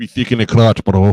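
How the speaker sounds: very loud, over-the-top fake Russian accent. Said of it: "we're gonna keep doing the the bad Russian accent".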